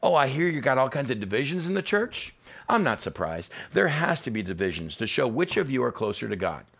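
thick, swooping sarcasm laid on heavy, acted out. Paraphrasing Paul's letter about divisions in the church: mock sarcastic Paul paraphrase. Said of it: "his sarcasm is coming in thick and deep".

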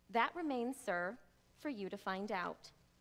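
ordinary delivery

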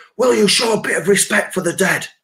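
mock shrill, very high, hollered shout. Retelling shouting at people while strapped to a stretcher: retelling own shouting. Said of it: "I'm shouting at all the pissheads going".

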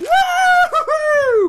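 thrilled, high, slow, loud rollercoaster whoop. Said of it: "it's like he was on an amusement park ride".

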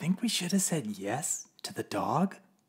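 soft whisper under the breath. Narrator reads Father's aside to Mother, whispering. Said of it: "whispered Father to Mother".

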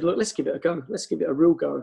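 normal talking voice

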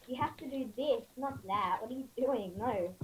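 ordinary talk

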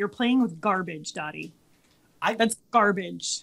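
put-on, withering, scornful, disdainful, contemptuous tone. Voicing the cat Peggy staring at Dottie, with total contempt. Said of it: "Peggy just stares at her with total contempt".

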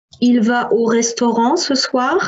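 rising question-like pitch on final word soir. French lesson on informal questions: rising pitch at the end. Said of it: "I'm only raising the tone, okay, the voice, and it is becoming a question".

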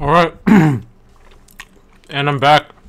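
talking while chewing. Announcing being back while still eating, talking while chewing. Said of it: "I'm still chewing though".

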